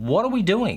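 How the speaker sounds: normal talking voice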